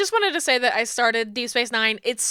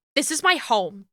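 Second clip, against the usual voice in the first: put-on intimidating delivery. Retelling how she looks at him and answers, mock-intimidating tone. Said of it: "but like intimidating this like baby faced man".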